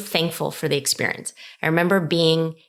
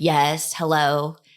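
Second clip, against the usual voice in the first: put-on grumpy, cranky marketer-style voice. Answering a phone call from an unknown caller, in a put-on cranky marketer voice. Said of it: "sort of cranky marketer voice".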